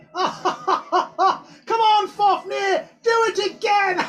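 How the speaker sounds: very high, loud speech with cackling laughter. Storyteller voicing a character during a dragon ride, cackling while talking. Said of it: "you just hear Nimriani laughing, cackling".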